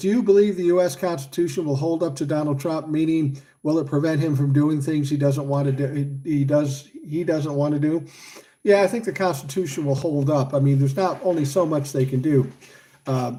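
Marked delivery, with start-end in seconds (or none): none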